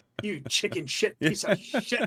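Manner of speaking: put-on old coach's gruff, berating, cussing voice. Imagining the old coach scolding people: imitating Coach Acker yelling. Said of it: "our old coach, Coach Acker, was there telling people".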